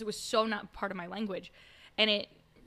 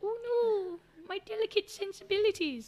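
put-on very high, crackly, cracking old lady voice; 11 semitones higher than usual. Discussing when language is hurtful, the speaker mocks a reaction in a cracking old lady voice. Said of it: "I do a great old lady voice".

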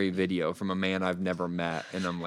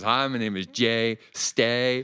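put-on speaking in a Southern US accent; 4 semitones higher, 3 dB louder than usual. Speaker retells a man by the fire introducing himself, Jay Stay's Southern accent. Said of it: "in his Southern accent".

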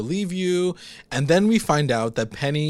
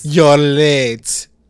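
put-on very loud old Russian woman accent, drawn out late; 10 dB louder than usual. Retelling a scene, quoting an old Russian woman in a put-on Russian accent. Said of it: "finally my accents can come through".

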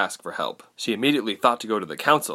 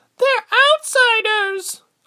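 loud, very high-pitched shriek; 8 dB louder than usual. A woman in the crowd of neighbors answers, shrieked. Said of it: "a woman shrieked".

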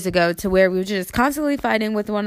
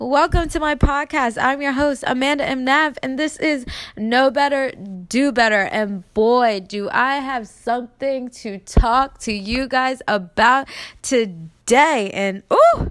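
bursting in all hyped up, very excited and energetic; 4 semitones higher than usual. Podcast host opening the show to listeners, yelling, freaking excited. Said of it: "why I'm yelling at you guys, and why I'm so freaking excited".

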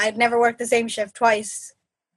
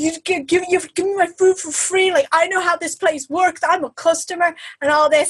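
put-on angry shouting, much higher pitch; 6 semitones higher than usual. Retelling a huge guy shouting at a worker by name, retelling a customer shouting. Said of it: "just like shouting at him".

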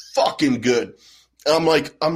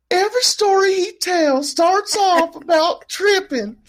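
squeaky, very high-pitched put-on voice. Repeating a friend's remark in an imitation of that friend: imitating Kaylin's voice. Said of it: "I do not sound like that".

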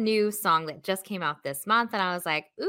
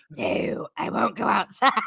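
put-on slow, creaky, rough, grumpy old man voice, drawn out. Doing the voice of one of your dogs answering mom, play Clint Eastwood as a jerk old man. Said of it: "like Clint Eastwood because he's such a jerk old man".

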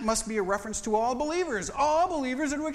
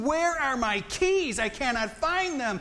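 big, slow, deliberate, drawn-out holler; 3 semitones higher than usual. Retelling a search for lost keys, yelling at Sue: retelling own yell. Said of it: "I'm yelling at Sue".

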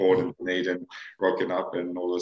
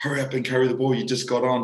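high, screamed, urgent hurrying yell; 6 semitones higher, 4 dB louder than usual. Retelling what a mate said during a penalty: imitating a scream. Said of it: "he's just screamed at me".

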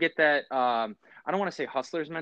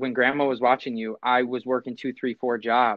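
ordinary delivery

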